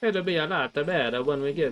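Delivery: Italian-sounding accent. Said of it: "why do I always sound Italian?".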